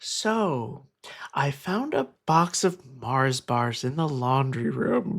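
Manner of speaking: slow, careful, deliberate delivery. Retelling going to the speaker's mother on the couch, speaking in a very quiet voice. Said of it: "I said in a very quiet voice".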